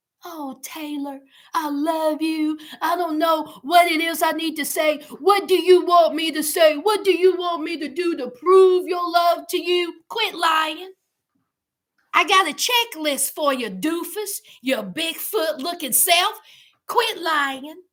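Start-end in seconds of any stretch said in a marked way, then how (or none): 0.2-9.9 mock pleading, begging voice. Acting out someone begging to get back in the house: imitating someone begging. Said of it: "begging like he sweat".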